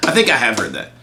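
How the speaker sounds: ordinary delivery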